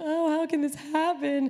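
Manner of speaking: crying, despairing, high and teary pleading. Retelling hobbling to the parents with a fractured foot: retelling crying. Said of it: "I hobbled crying to my parents".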